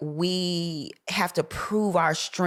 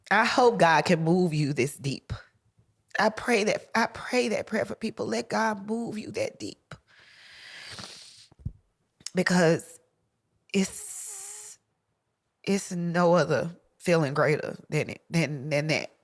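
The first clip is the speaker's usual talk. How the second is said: speaking through tears. Speaker, already in tears, keeps talking to listeners: crying while talking. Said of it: "I don't want to keep crying".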